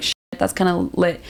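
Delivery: ordinary delivery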